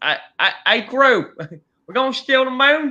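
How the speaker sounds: high, bad put-on British accent. Speaker quoting Gru's assistant from Despicable Me, in a crappy British accent. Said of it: "that like crappy like British accent".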